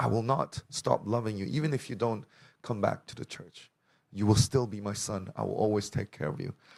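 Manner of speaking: usual speaking voice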